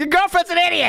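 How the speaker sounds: very high, rattled off, rolled right off the tongue. Retelling what Cerulean says in Marble Rivals, rattled off quickly. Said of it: "just rolls right off the tongue".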